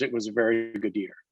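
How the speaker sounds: usual speaking voice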